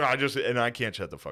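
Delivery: ordinary delivery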